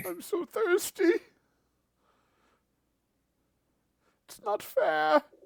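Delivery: very high, loud, wailing, tearful sobbing. Voicing a starving vampire sobbing at the players: sobbing vampire plea. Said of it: "He's just full on sobbing as he looks at you".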